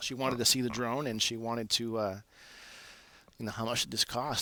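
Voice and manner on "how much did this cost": ordinary delivery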